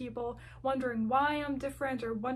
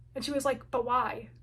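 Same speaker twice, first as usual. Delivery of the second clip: ordinary talk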